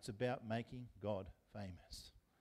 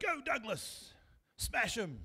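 put-on, very high, enthusiastic cheering shout; 11 semitones higher, 4 dB louder than usual. Recalling football games, the speaker acts out the speaker's dad on the sidelines: imitating dad yelling. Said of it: "he used to yell out".

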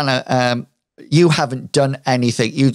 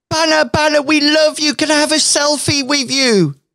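very high call shouted loudly; 14 semitones higher than usual. Voicing a girl who calls over to banner: shouting over to someone. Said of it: "girl here shouts over to you".

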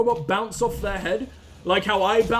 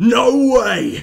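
very loud, rough, burly pub-man roar; 10 dB louder than usual. Mocking ninjas whose supposed Japanese sounded like the biggest man in a pub. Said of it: "like the largest man in the back of the pub just going".

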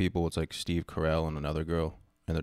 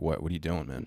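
ordinary talk

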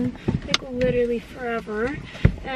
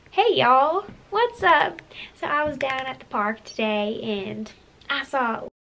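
put-on American Southern accent. Trying out different accents for viewers, now a Southern accent. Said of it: "What about a Southern?".

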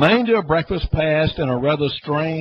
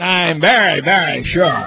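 belittling, dismissive, disparaging tone with raised voice; 3 semitones higher, 6 dB louder than usual. Reading Thresa Claus's added remark after James's reply, in a disparaging tone. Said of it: "she added in a disparaging tone".

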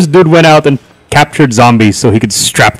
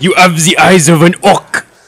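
put-on French accent; 4 semitones higher than usual. Quoting what a very French man said to them, in a put-on French accent. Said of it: "He's so French".

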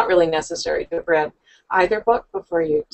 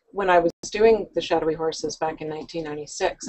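ordinary delivery

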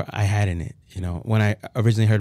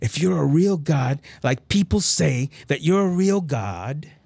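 put-on scream, higher pitch; 7 semitones higher than usual. Retelling demanding that god talk to him: retelling screaming at god. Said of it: "I start screaming at him".

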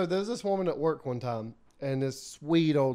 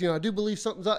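put-on stuttering, stammering speech, higher; 5 semitones higher than usual. Retelling an awkward answer about belief: imitating own stuttering.

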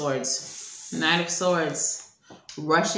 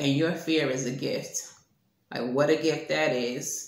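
heavy, mocking sarcastic tone; 3 semitones lower than usual. Relaying a message said sarcastically: retelling a sarcastic remark. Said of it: "Spirit said sarcastically".

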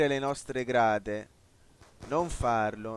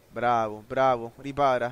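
normal talking voice

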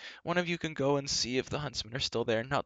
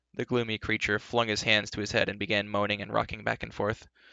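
ordinary delivery, nothing marked

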